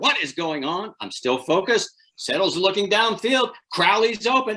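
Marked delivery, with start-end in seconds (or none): 0.0-0.9 restrained, held-back, mild contained shout. Retelling a broadcast mix-up, imitating the director of broadcasting yelling. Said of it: "He's yelling in this ear".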